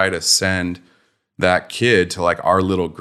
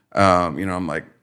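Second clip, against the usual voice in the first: plain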